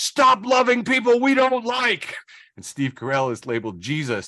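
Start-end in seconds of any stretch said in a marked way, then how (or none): 0.0-2.2 screaming delivery, pitched very high. Describing a cartoon, voicing the woman labeled religious people: retelling a scream. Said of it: "she's screaming".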